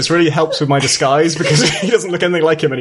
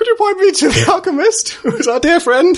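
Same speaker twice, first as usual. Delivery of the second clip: very high, polite character voice, placed way up; 13 semitones higher than usual. Asking the armored guard for the alchemist, disguised: high-pitched Aljon voice. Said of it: "It's sort of up here".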